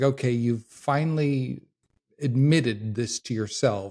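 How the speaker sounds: plain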